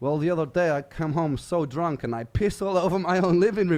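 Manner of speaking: loud, bad put-on vague European accent. Speaker retelling what a prospective flatmate told them, in a bad vague European accent. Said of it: "Just some some vague European accent".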